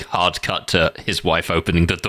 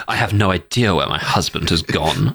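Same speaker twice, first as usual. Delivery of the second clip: ordinary talk, nothing marked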